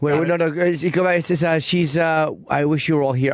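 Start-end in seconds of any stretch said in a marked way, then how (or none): none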